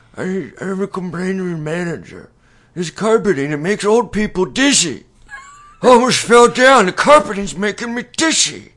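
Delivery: put-on shrill, very high, very loud, booming elderly voice. Recalling an old person complaining at the box office, imitating a complaining old person. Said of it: "I'll do my best impression".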